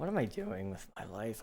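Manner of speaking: breaking, cracking voice mid-line. Speaker joking about their upcoming signature dog beds, voice cracking. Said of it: "that was a little bit of a voice crack".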